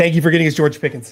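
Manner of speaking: loud, rushed, rattled off very fast. Reluctantly thanking someone so he can move on, said very quickly. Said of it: "I'm gonna say it really fast so I can move on".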